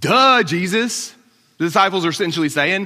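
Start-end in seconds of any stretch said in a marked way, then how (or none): 0.0-1.1 mock snarky, sarcastic tone, higher pitch. Retelling how the disciples answered jesus in the crowd: imitating a snarky, sarcastic reply. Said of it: "little snarky, sarcastic reply".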